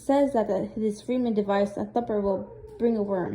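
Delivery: plain reading voice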